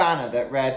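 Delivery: plain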